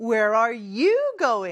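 "you" stressed, slow and careful.

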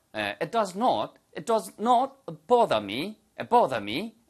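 British accent, "bother" said the British way. An english teacher demonstrates british pronunciation to learners, in a british accent. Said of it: "이렇게 하는 식으로 발음하시면 영국식 발음이 되겠죠".

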